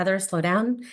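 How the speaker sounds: normal talking voice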